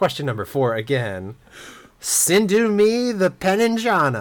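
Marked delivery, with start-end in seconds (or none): 2.0-4.2 loud, high-pitched belted exclamation. Rereading quiz question four's garbled clue, in a Tom Cruise impression. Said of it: "I tried to Tom Cruise it a little bit there".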